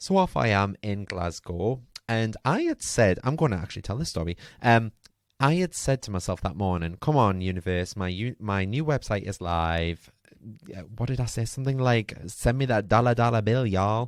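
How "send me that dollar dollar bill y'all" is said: exaggerated, bad, country Texas American accent. Retelling what they said to the universe that morning, in a bad american accent. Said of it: "Something like that in an American accent".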